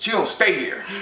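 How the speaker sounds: put-on rude, snippy, attitude-filled tone. Retelling how a guy answered the phone when calling a friend, mimicking a rude attitude. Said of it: "he said it with an attitude".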